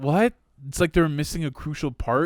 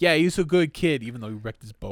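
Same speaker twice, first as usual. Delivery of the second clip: normal talking voice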